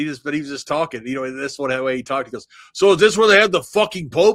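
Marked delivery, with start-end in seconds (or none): 2.7-4.4 big booming voice, loud and high, chatty. Retelling Rene Goulet's remark on a visit to the Vatican, booming voice. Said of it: "Rene got that booming voice".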